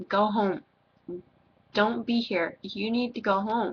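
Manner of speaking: ordinary talk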